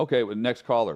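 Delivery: ordinary talk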